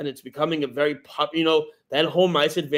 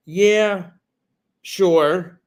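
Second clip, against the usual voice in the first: put-on hesitant, doubtful, unconvincing tone, a bit raised; 4 semitones higher, 6 dB louder than usual. Retelling how a man answered whether he thinks he can win, mimicking a hesitant answer. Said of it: "he sounded very hesitant and unsure".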